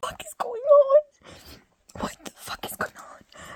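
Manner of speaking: play-acted, very loud, breathy crying through sobs, disbelieving. Retelling own reaction to first watching the scene: retelling own past sobbing. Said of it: "crying, sobbing, and I was like".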